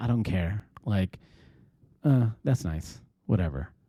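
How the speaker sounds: put-on, mock-nonchalant, indifferent tone. Mimicking a woman's reaction to a comment on a podcast, mock-nonchalant, imitating her. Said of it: "her tone is just so nonchalant".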